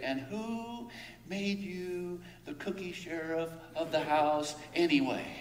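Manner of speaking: soft, goofy, silly put-on voice. Retelling a line once said to a tattling child, in a silly voice. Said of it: "with a silly voice".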